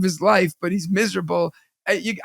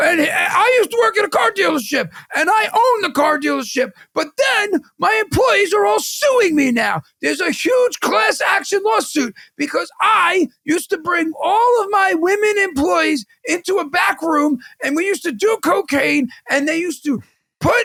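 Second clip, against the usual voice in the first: play-acted angry screaming rant, pitched very high; 10 semitones higher than usual. Retelling an online video, the speaker acts out a man imitating angry screaming. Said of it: "he's screaming it like he's angry".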